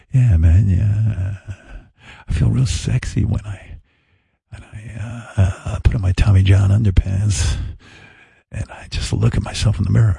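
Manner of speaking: mock, put-on sexy voice. Mocking a man's sexy ad talk, imitating a put-on sexy voice. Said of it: "I gotta talk more like him".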